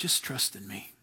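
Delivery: still, small, very quiet whispered voice. Voicing God speaking to a tired, struggling person: still small voice. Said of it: "It's that still, small voice".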